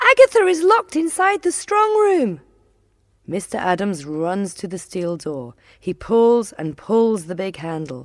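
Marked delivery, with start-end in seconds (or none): 0.0-2.4 very high, loud shriek. Narrator reading Annabelle and her sister behind the railings, screaming. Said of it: "suddenly scream".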